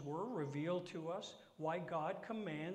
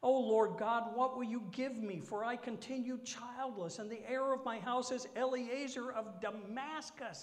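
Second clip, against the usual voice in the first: high, loud, whining, complaining pleading tone; 6 semitones higher, 5 dB louder than usual. Reading aloud a character's plea to God, the speaker uses a whiny complaining voice. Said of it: "here comes the whiny complaint".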